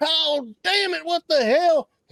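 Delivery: very high, drawn-out, pained cry. Narrator voicing a man shot in the leg in the street, shouting in pain. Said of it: "he starts shouting and screaming like he's in pain".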